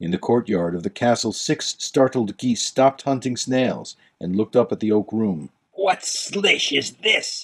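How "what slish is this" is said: revolted, disgusted outburst, high and drawn out. The Duke, seeing the pool of melted gems on the table, gives a disgusted exclamation. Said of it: "exclaimed the Duke, disgusted".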